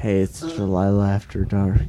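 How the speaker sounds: late-night radio host delivery. Pretending to be the radio host Delilah: Delilah radio host impression. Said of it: "No one believes that I'm Delilah".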